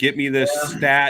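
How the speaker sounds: loud, high yelling. Retelling another speaker yelling at somebody with the mic muted: imitating someone yelling. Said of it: "you were yelling at somebody".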